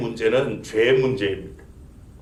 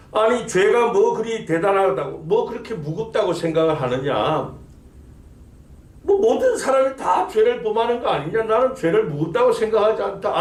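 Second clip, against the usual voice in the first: high, sneering, sarcastic mocking delivery. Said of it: "빈정대며 하는 말이".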